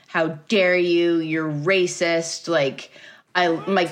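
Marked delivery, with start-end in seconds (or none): 0.1-2.5 acted freaked-out, frantic, indignant, outraged outburst. Retelling a seller's direct message: imitating someone freaking out. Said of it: "freaking the fuck out".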